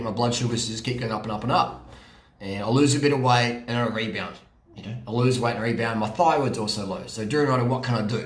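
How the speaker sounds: ordinary delivery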